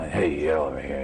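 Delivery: low, dark villain voice.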